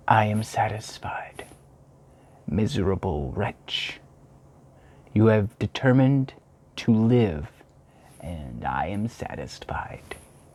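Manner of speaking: slow, hushed, audible whisper close to the ear. Narrator reads a voice addressing the storyteller close to his ear, in an audible whisper. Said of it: "when a well-known and abhorred voice, apparently close to my ear, addressed me in an audible whisper. / Suddenly the broad disk of the moon arose and shone full upon his ghastly and distorted shape as".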